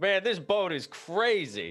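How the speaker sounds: very high, drawn-out yell calling out. Voicing a character on a boat calling to everyone: yelling to everybody. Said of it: "Leaf just yells to everybody else".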